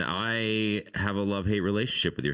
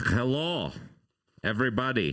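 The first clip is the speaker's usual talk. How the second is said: weird, horrible, fake put-on Russian accent; 3 semitones higher than usual. Greeting everybody at the start, in a horrible Russian accent. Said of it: "With my horrible Russian accent".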